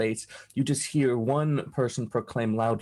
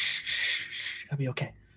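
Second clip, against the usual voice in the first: urgent, soothing whispered shushing; 2 semitones higher, 4 dB quieter than usual. Voicing a hidden person hushing others behind a slab: loud hushing. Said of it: "somebody very loudly goes".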